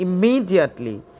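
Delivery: immediately, with weight on second syllable me. Drilling English adverb pronunciation, stress on me in immediately. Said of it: "মি এর মধ্যে চাপ দিচ্ছি".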